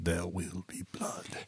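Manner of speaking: very soft whisper with almost no voice at all. Acting out a defeated character on a bowling lane: whispering as Daniel. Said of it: "he would just whisper".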